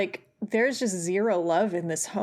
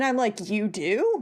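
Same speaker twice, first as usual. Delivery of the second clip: ordinary delivery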